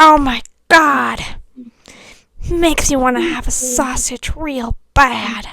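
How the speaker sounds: slow actress voice, every word drawn out. Doing a requested impression: Jennifer Coolidge impression. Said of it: "I can also do Jennifer Coolidge".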